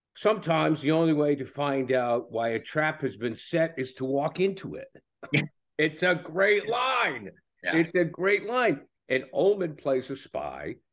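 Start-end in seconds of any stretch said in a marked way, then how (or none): 0.2-4.9 very bad attempted British accent. Quoting a line spoken by Gary Oldman's spy character, bad British accent as Jackson Lamb. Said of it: "I'm going to do it in a very bad British accent".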